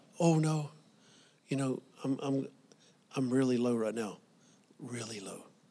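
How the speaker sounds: very soft, hushed, fake-humble voice. Recounting talking to an individual, the speaker imitates their false humble voice. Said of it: "just a false voice".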